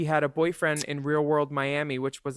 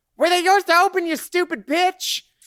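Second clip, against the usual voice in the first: very high, shrill, loud, furious shrieking yell; 9 dB louder than usual. Retelling a Real World scene on the stairs: imitating someone yelling. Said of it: "he's yelling at her on the stairs".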